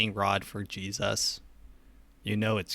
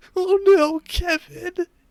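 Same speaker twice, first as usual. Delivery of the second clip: high, loud mock sad wail. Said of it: "that guy's getting really sad".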